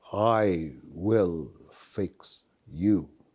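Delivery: very quiet, hushed, very slow, menacing. Showing how a threatening line sounds: quiet and slow, threatening. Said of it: "When we are serious, threatening, we drop volume and we drop the speed".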